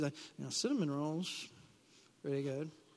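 very soft, hushed, gentler voice full of craving. Talking about fasting, voicing what your flesh says in a little nicer voice. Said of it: "Now it's a little nicer voice".

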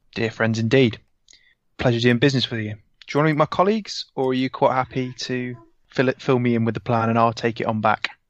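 ordinary talk

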